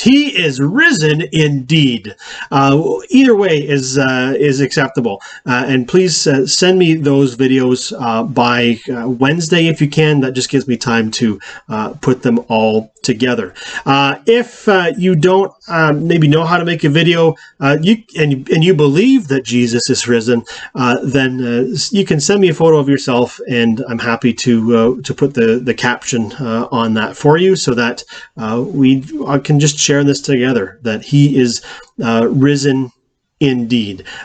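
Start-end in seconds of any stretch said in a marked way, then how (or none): 0.0-2.2 slow, firm voice full of deep conviction. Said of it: "just some deep conviction in your voice".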